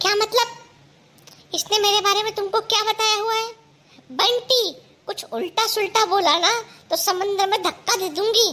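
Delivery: angry, threatening outburst. Demanding to know what was said about her, threatening a push: angry. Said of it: "गुस्सा क्यों हो रही है, भड़क क्यों रही है?".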